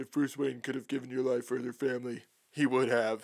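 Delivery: flat, uninflected monotone with no rise. Recapping a movie scene, the speaker quotes Batman's reply in a flat Batman impression. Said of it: "with like no inflection in his voice".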